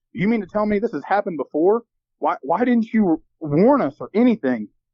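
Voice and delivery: acted, high, angry, stunned and shocked tone. Retelling own question to the property manager: imitating own angry, shocked tone. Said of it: "a very angry and shocked tone".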